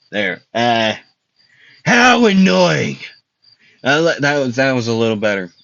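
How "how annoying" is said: high, yelled, put-on character voice. Trying to get a character's voice right, yelling in a character voice. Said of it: "I'm sorry for yelling".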